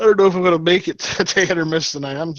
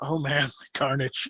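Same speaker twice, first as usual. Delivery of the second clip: voice deliberately pulled down, lowered and soft; 4 semitones lower, 9 dB quieter than usual. Retelling what someone said in a video: imitating a lowered voice. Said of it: "it lowered his voice".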